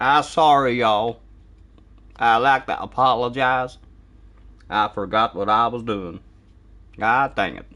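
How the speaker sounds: bad, terrible, put-on American accent. Answering chat after a viewer's remark, in a terrible american accent. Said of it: "that's a terrible American accent".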